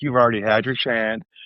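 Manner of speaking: ordinary delivery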